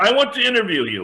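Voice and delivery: put-on loud French Canadian accent, pitched way up. Retelling what Jacques said after your reply, in Jacques's French Canadian accent. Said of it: "in that French Canadian accent".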